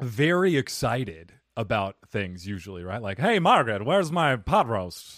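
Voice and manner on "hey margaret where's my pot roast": put-on old high-society transatlantic accent, whiny and twangy. Showing how high society used to speak, in an old transatlantic accent. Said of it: "Transcontinental accent".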